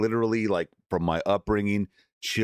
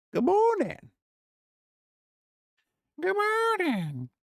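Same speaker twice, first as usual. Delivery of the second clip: very high, animated, swooping cartoon character voice. Greeting the chat in the morning, doing a Meatwad voice. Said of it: "I'm trying to do my best Meatwad impression".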